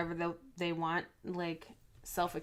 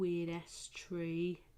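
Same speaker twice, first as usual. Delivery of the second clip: put-on soft, theatrical voice like an old stage actor; 5 dB quieter than usual. While smudging out a tree, speaker repeats the phrase in a Shakespeare voice. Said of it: "That's my Shakespeare voice".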